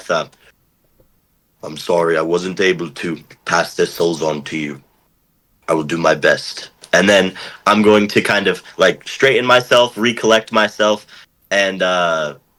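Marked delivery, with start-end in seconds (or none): 1.6-6.7 under the breath, lower, quieter. A character stands up and apologizes to Ilmater, quietly under the breath. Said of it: "apologize to Ilmater quietly under my breath".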